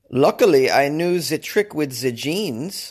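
clumsy, bad put-on German accent. Reading a news story aloud, the speaker quotes a rescued man in a bad german accent. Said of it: "This is a bad German accent".

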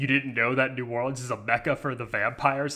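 ordinary talk, nothing marked

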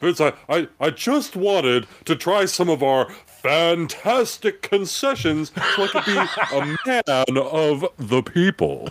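put-on ring announcer voice. Acting out a scene sneaking concession food back to ringside: Howard Finkel voice. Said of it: "Howard, played by [name]".

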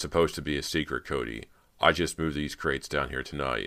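ordinary delivery

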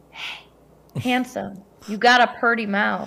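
mock flirtatious delivery, fake come-on tone. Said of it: "pretend to spoon him and go".

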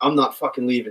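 ordinary talk, nothing marked

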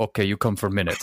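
put-on Eastern European grandmother accent. Retelling what a grandmother said, in an eastern european grandmother accent. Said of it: "She sounded like an Eastern European grandmother".

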